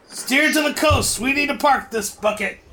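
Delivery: loud, high-pitched shouting. Voicing the captain running up to the main deck: captain yelling. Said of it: "the captain runs up to the main deck and yells".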